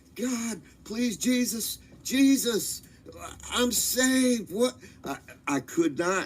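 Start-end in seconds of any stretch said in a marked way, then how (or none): 0.2-4.8 mock desperate, pleading scream, high and drawn out. Retelling a terrifying flight toward a light: retelling own past screaming. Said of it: "I am screaming like I've never screamed".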